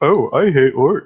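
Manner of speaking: high, loud, very drawn-out male character voice. Using a feat to taunt a spider: mimicking that guy's voice. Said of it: "mimic the sound of that guy".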